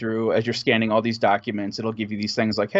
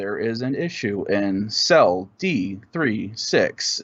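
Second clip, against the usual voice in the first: mechanical, synthesized, straight robot voice. Describing a game where a robot voice speaks your response; Sam robot voice. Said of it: "speak like straight up robot".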